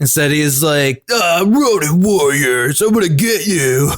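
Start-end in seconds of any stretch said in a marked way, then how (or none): 1.1-3.9 laid-back surfer dude voice. Describing how an armored character in a show sounds, doing a surfer dude in armor voice. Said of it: "surfer right. dude in armor voice".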